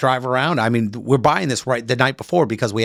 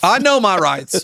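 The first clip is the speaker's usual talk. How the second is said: put-on Southern US accent, pitched up; 7 semitones higher, 3 dB louder than usual. Mimicking people who insist on their right to carry guns, mock Southern accent. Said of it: "I know I said that with a Southern accent".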